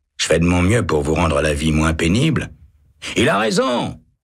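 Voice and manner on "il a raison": very high, shrill crying out. A bystander shouts, siding with the kind guard after a prisoner insults him. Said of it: "crie Ensie".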